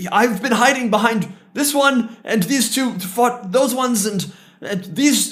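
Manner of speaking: very frightened. Narrating a scene, voicing a wounded man who explains who fought whom; terrified. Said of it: "very fucked up and very terrified".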